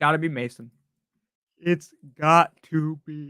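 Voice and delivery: speaking through a yawn. Host answering a super chat question about running backs, yawning. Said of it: "I don't know why I'm yawning".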